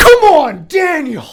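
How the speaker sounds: shrill, very loud, high, full-voice yell. Retelling the coach yelling during a free throw: imitating the coach yelling. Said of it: "He just yells that".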